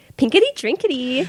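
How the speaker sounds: high-pitched, mock basic-girl voice. Asked to do one more, a co-host does a mock basic-girl voice. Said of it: "but I can sound like one".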